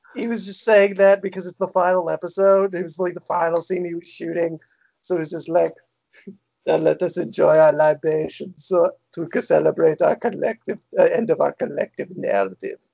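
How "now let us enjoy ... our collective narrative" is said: put-on flat, dry German accent. Imagining the final scene being shot: Werner Herzog impression. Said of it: "said in a dry German accent".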